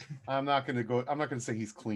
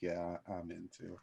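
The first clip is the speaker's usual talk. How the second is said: very quiet, leaning-in confidential aside; 7 semitones lower, 13 dB quieter than usual. Retelling what a man adds after a loud public declaration: leaning-in aside. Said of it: "and then leans in and he's like".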